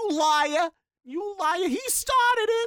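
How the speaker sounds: put-on very high, shrill, thick New York accent. Imitating the kids from a scene, in a thick New York accent. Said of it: "I love their thick New York accents".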